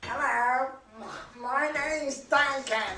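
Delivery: stiff robotic voice, like a machine talking. Asked to say hello as Duncan, [name] speaks in a Duncan robot voice. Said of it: "in your best Duncan robot voice".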